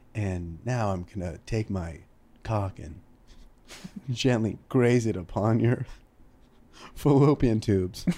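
hushed, slow, drawn-out soft half-whisper. Imagining dirty talk from a guy at NPR: imitating an NPR guy half-whispering. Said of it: "he's just whispering".

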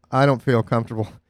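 ordinary talk

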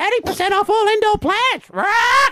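very high, parrot-like galah squawk. Voicing a pink galah shown in a shot, squawking galah bird voice. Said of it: "I'd be doing the galah voice like, ... Like that".

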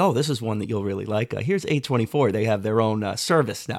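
plain

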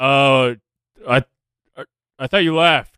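startled, caught off guard, stammering, tripping over words. Voicing a character who finds someone still standing there: taken aback. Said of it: "is taken back at, at, at that and goes".

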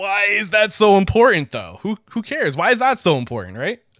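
put-on sarcastic tone. Playfully challenging the guest's point, asking who cares: put-on sarcastic tone. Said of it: "I'm being sarcastic".

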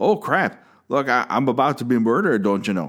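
clumsy, bad put-on Wisconsin accent. Choosing a favorite death scene, redoing the victim's line: Wisconsin accent. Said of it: "That's my Wisconsin accent".

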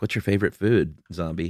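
ordinary delivery

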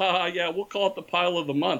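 mock chuckling through the words, joking laughing voice. Retelling a buddy's reply to a joking request, imitating someone laughing. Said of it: "And he laughed".

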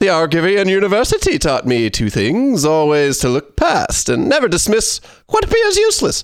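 foppish, sing-song voice swooping up and down. Reading card flavor text after others ask for an accent: Mad Hatter voice. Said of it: "[name] sounds like the Mad Hatter".

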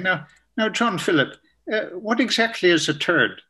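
imitated Irish accent. Retelling a sister who came up after his talk, in a lovely Irish accent. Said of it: "with a lovely Irish accent saying".

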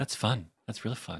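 hushed announcer voice. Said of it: "the normal show was like".

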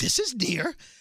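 out-of-breath, panting character voice throughout. Acting out the near-and-far bit in a breathless Grover voice. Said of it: "Grover is out of breath, and he's like".

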